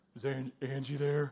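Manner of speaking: extra-deep, hushed put-on voice. Calling a girl's landline, disguising the voice in case her dad answers: extra-deep voice. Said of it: "you make your voice extra deep".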